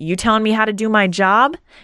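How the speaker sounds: mock crabby, angry, spat-out snapping voice. Retelling a crabby ticket clerk snapping at a traveler: imitating an angry crabby clerk. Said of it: "the anger i-, is so present that she's, like, spitting".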